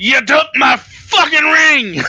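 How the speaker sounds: shouting angrily. Voicing Gort during a magic missile attack: yelling in character. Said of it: "Gort yells".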